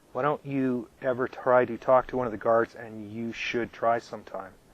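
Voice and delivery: plain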